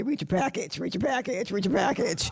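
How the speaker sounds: very cranky, crabby, grumbling voice. Retelling a joke about last term's meeting reminder: imitating Mister Boner's cranky voice. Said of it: "in a very cranky voice".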